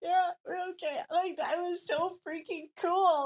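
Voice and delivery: put-on weepy gush, crying through, high and loud. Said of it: "still crying".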